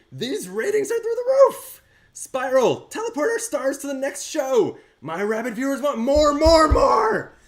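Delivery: very high-pitched, loud, gleeful shriek. A narrator voices Mojo, described as shrieking with glee, weird high-pitched voice. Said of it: "weird high pitched voice".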